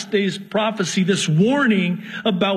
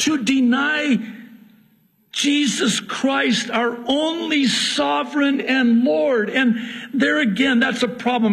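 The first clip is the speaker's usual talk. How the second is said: raised pulpit-style preaching, high and slow yelling; 5 semitones higher than usual. Preaching against denying the Lord: yelling. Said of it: "I'm sorry, I'm yelling".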